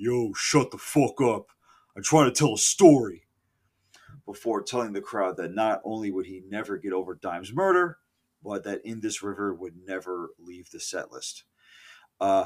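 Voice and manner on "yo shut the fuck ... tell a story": yelled in faked New York accent. Retelling Zach yelling at a concert crowd, Zach's New York-like yell. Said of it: "yelled out in his oddly New York City like accent".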